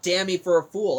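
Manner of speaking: plain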